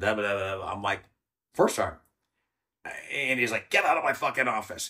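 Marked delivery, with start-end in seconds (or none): 3.7-4.9 angry, pissed-off delivery. Retelling what he said after calling the speaker back into the office, retelling someone pissed off. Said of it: "And he was all pissed off".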